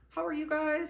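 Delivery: mock friendly, high, loud, cheery tone.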